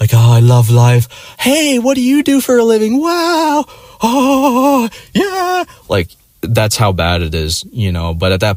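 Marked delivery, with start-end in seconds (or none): 0.1-5.6 acted-out drunken babble, very high and slow. Retelling own past words at a bar: imitating own drunk self. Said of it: "drunk stage where I'm like".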